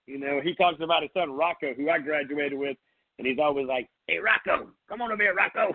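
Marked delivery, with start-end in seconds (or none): 4.0-5.7 higher, raspy put-on voice. Imitating a coach calling to his son: imitating Coach Walsh's raspy voice. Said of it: "still get that raspy voice".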